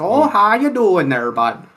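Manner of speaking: put-on heavy Wisconsin accent. Describing arriving at the shop, the speaker imitates a thick Wisconsin accent. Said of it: "the Wisconsin accent is a thick one".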